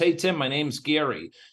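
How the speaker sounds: normal talking voice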